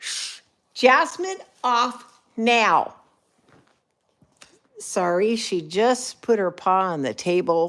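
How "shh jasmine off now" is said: high, loud scolding yell. Scolding a pet that put its paw on the table, yelling at the pet. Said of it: "Sorry for yelling at you guys".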